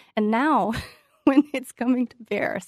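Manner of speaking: words breaking through laughter. Commenting on a report during a discussion, laughing while talking. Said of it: "I'm laughing 'cause it's so ridiculous".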